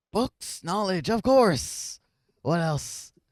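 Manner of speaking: put-on very old, ancient-sounding voice, high and loud. Voicing a spider answering a visitor's question, in a very old-sounding voice. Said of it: "very old sounding voice".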